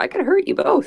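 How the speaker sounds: put-on very high, unbroken, prepubescent little boy voice. During a band story game, threatening two other players in a prepubescent voice. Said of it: "In just like the most prepubescent voice possible".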